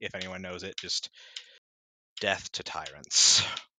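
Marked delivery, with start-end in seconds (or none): 2.2-3.4 low, muttered under the breath. Voicing a character muttering in Draconic while walking over: muttered under his breath. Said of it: "just kind of under his breath".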